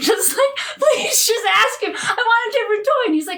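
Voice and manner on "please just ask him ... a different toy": put-on high, teary voice, crying and laughing at once. Retelling begging him to ask for a different toy, retelling crying, laughing pleas. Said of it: "I was just like screaming, like crying just, and laughing".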